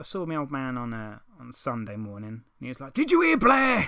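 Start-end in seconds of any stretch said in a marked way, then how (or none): 2.9-3.9 mock seething fury, very loud and very high. Retelling what the speaker's old man said on Sunday: imitating someone seething. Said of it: "just seething, seething".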